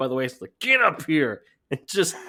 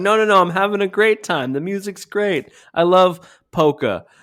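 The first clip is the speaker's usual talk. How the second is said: loud, drawn-out, forced fake enthusiasm; 4 semitones higher, 5 dB louder than usual. Mocking a co-host's match commentary, mocking fake party enthusiasm. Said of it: "sounded like somebody who's lying about a party".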